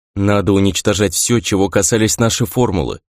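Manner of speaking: ordinary delivery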